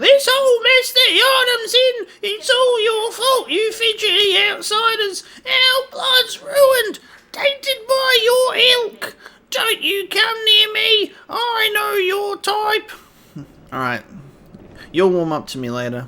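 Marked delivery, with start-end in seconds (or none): 0.0-12.9 put-on annoying, shrill, ratchety, very high old woman voice. Speaker reads an old lady character's lines, in annoying, ratchety old lady voice. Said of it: "very annoying, ratchety old lady voice".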